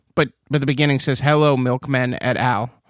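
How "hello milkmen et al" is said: usual speaking voice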